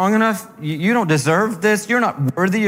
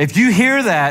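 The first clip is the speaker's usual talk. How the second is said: ordinary delivery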